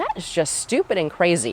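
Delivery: ordinary delivery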